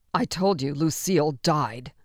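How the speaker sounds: impatient, harsh-toned, slow delivery. Marlene answers a woman who hoped to see Lucille, in a harsh voice. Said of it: "Marlene's voice was harsh".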